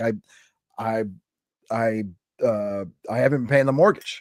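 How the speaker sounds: mock emotional, halting, stop-start stammering voice. Recalling a man who got emotional talking to him, imitating an emotional man. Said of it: "he was emotional, and he was like".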